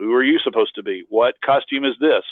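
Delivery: ordinary talk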